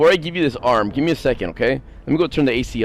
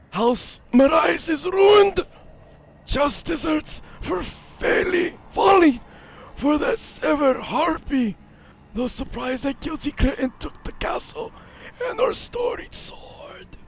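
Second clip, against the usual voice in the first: put-on rasping, ugly voice, very high pitched; 14 semitones higher, 4 dB quieter than usual. Voicing a character's lines aloud, in a raspy, ugly voice. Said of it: "some fucking raspy, ugly voice".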